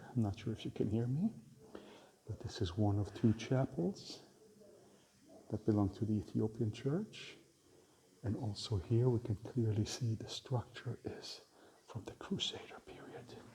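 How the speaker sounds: hushed quiet voice. Guiding viewers through a small chapel, speaking quietly. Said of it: "I'm gonna be a little bit quiet".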